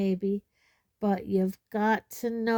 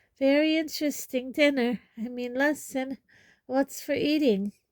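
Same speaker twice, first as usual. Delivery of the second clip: jumbled, hurried gabbling, unnaturally high pitch; 5 semitones higher than usual. Narrator reading Neville's answer after Hermione's question, gabbling in an unnaturally high voice. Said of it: "gabbled in the same unnaturally high voice".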